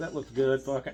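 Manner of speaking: ordinary delivery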